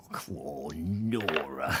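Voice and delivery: voice dropped way down. Picturing Kenneth Connor as the Titanic's captain looking out to sea: Kenneth Connor impression.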